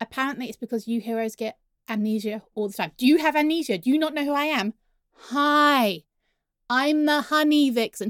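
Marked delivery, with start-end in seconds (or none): 5.1-8.1 very slow, every word stretched, drawn out. A villain introducing themself to the heroes, talking slowly. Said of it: "I don't know why I'm talking slowly".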